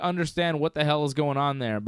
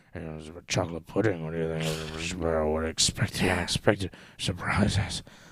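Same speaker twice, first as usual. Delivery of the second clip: odd, low-key, hushed, strange muttering mumble; 9 semitones lower, 3 dB quieter than usual. Doing a weird impression of Vince, hushed Vince McMahon mumble. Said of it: "this strange, hushed mumble that's not the boisterous Mister McMahon".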